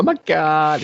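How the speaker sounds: put-on irritating, very high, loud Valley Girl voice. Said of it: "the fucking Valley Girl".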